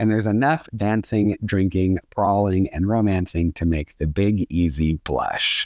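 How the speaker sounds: ordinary delivery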